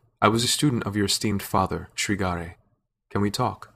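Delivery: ordinary delivery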